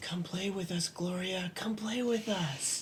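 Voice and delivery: close, soft, creepy whisper. Whispering creepily in another character's ear: whispering. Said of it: "I whisper in Gloria's ear".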